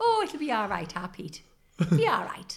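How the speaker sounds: motherly mum voice. Imitating the other speaker's mum reassuring her son: imitating the other speaker's mum. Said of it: "that's your mum".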